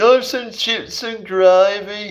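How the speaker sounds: very high Brummie accent with gravy drawn out. Talking about the worst british accents, the speaker puts on a birmingham accent. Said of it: "the Birmingham accent".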